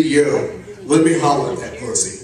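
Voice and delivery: ordinary talk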